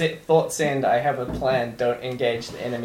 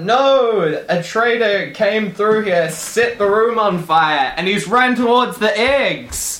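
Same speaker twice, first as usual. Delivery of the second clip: very loud, high, booming alarmed yell, drawn-out no; 9 semitones higher, 8 dB louder than usual. Playing a character warning someone about a traitor: yelling out a warning. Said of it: "and we yell out".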